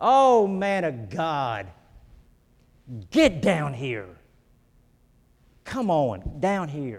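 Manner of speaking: sarcastic, mocking tone with swooping pitch. Acting out his call to the man of god to come down, mock-sarcastic. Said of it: "Can you hear the sarcasm in his voice?".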